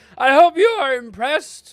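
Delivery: voice cracking. Making the googly eyeballs bigger, the speaker addresses the audience, voice cracking. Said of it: "a bit of a voice crack".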